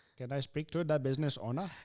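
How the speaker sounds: put-on Filipino accent, as heard over a phone. Imitating a spam caller from the Philippines, on request: put-on Filipino accent. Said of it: "Go ahead and do it one more time".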